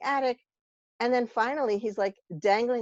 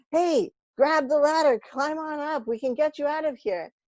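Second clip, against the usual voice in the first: raised, pitched-up call, as through a megaphone; 7 semitones higher, 3 dB louder than usual. Telling a joke, as a helicopter crew calling down: shouting through a megaphone. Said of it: "throws down a ladder and shouts".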